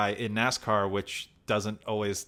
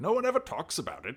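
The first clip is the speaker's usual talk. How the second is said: calm, commanding voice, pitched up; 6 semitones higher than usual. Retelling how an actor delivers a line: Ian McKellen commanding voice. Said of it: "Gandalf kind of, like, f-, commanding voice".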